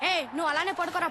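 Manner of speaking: put-on high-pitched, excited little boy voice.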